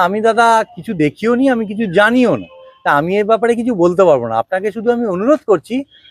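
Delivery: ordinary delivery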